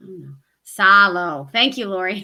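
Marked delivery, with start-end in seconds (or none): 0.7-1.5 loud Southern silo with an ah vowel. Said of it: "say it with a Southern accent".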